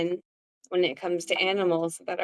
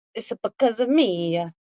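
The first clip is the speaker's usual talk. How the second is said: put-on Italian accent thrown in; 3 semitones higher, 3 dB louder than usual. Imagining blaming oneself, the line comes in a put-on italian accent. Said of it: "Italian accent randomly for that one".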